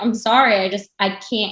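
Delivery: put-on crying, tearful pleading voice. Speaker recounts breaking down while he hugged her, retelling crying apology. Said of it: "I just couldn't stop crying".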